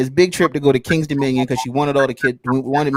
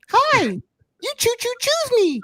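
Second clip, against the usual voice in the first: very high, slow, swooping, sing-song cartoon voice. Retelling how they sounded before puberty: Ralph from The Simpsons voice. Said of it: "I had one of them Ralph from Simpsons voices".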